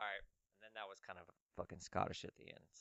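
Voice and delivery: ordinary talk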